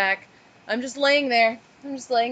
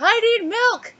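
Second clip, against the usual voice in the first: put-on scream, higher; 11 semitones higher, 4 dB louder than usual. Retelling a partner running out of a tent: imitating someone screaming. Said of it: "he's screaming".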